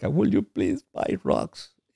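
mock tearful, almost whispered, hushed, breathy crying voice. Retelling pleading with her at the time, acting out a crying plea. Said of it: "And I'm crying. I'm embarrassed".

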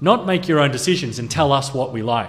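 ordinary talk

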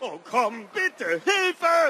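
high, loud, desperate screaming.

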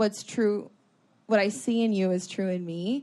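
ordinary talk, nothing marked

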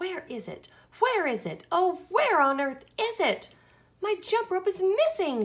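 very loud, high-pitched, booming furious bellow. Narrator reads a furious girl charging from her room, booming angry shout. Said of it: "she boomed".

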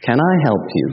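sweet, soft, gentle, kind voice. Acting out a parable where a guide offers help: sweet gentle voice. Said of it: "a sweet voice says to you so gently".

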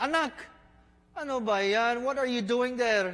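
put-on high-pitched Filipino accent. Acting out parents calling to their crying child, in a Filipino accent. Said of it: "That's my Filipino accent".

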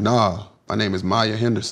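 mock dead-serious, acted total seriousness. Retelling how another person answers the speaker's teasing, a mock dead-serious reply. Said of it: "he'll dead ass be serious and say".

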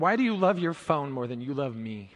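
put-on tearful child voice. Retelling the daughter's question to her father: imitating a tearful child. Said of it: "with tears in her eyes".

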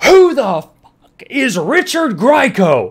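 loud, drawn-out, high-pitched yell. Retelling how he yelled his question to the whole class, imitating someone yelling. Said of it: "he like yells it to the whole class".

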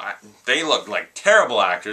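usual speaking voice

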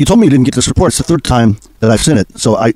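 normal talking voice

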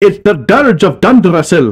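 put-on horrible Scottish accent. Reacting out loud during a stream, in a horrible scottish accent. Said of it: "I say in my horrible Scottish accent".

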